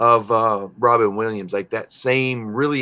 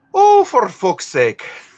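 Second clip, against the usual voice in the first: very high, loud Scottish accent; 12 semitones higher, 5 dB louder than usual. Teased about speaking like the Queen, cussing back: Scottish accent. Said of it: "That sounded a bit more Scottish".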